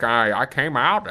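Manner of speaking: very slow, stumbling, drawn-out words. Retelling Caitlyn Jenner on a Netflix show: Caitlyn Jenner impression. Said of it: "Bruce Jenner talks like that".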